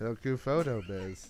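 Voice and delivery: completely robotic, mechanical voice. Showing someone how a podcast catchphrase should be said: completely robotic voice. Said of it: "Like just completely robotic".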